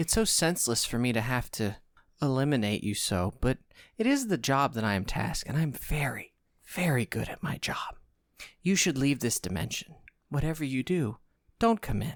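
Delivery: gentle, kindly, softest whispered voice. During a tabletop game session, a character addresses the players: softest, kindest whisper. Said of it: "the softest, most whispering, kindest voice".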